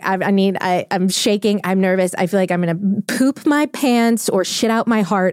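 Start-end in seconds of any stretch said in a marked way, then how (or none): none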